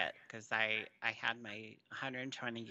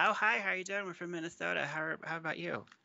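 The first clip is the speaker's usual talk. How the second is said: eager, neighborly, chatty chatter, pitched up; 7 semitones higher than usual. Reenacting someone on a plane trying to chat: reenactment of a chatty plane seatmate. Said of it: "my reenactment of trying not to talk".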